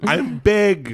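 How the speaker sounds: high-pitched and loud exclaiming. Joking around with others who comment on the voice, doing a Tom Hanks impression. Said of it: "your impression of Tom Hanks is just I'm big".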